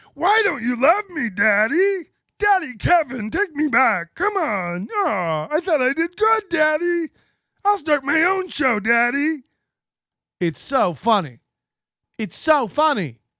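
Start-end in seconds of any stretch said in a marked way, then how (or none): 0.2-9.4 high-pitched puppet-style voice. Retelling a puppet doing someone's inner monologue: imitating a puppet voice. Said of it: "He does the voice better".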